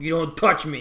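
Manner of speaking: monster voice. Voicing an ogre that turns around after breaking free: ogre voice. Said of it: "he turns around and he's like".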